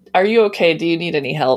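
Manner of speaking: usual speaking voice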